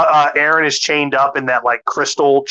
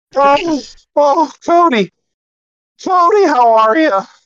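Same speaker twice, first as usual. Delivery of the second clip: high-pitched, loud mock sob from grown man. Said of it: "You don't sound so well, though, [name]".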